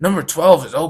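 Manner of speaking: loud, irritated, pissed-off, all-attitude delivery. Retelling how an impatient man spoke to another customer: imitating a pissed-off tone. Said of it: "all attitude, like, pissed off".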